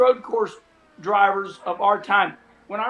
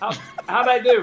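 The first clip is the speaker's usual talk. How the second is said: usual speaking voice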